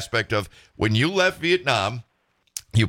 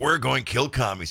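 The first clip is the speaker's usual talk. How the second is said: plain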